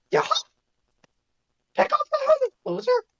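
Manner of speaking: voice pushed way up high in pitch. Doing the cartoon voice again with a prop: Mickey voice. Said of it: "I can't do a good Mickey voice".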